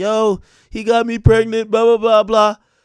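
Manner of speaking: loud, tearful, sobbing crying voice. Retelling a phone call from a friend who was upset: imitating someone crying. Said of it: "Selena called me crying".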